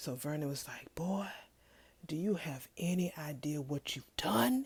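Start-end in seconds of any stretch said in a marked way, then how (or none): 1.0-4.7 hushed, under-the-breath stage whisper. Retelling a man's question to a boy: imitating someone whispering. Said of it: "whispering that shit".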